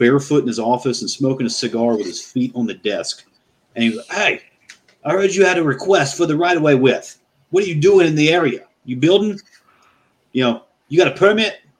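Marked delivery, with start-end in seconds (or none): 4.2-11.5 put-on, brash, pitched-up New York accent. Retelling what this guy said to the speaker: new york accent. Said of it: "it sounded like he was from New York".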